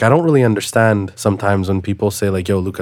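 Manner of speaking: ordinary delivery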